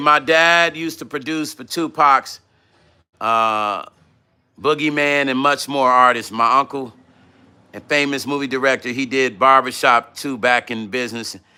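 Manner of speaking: ordinary talk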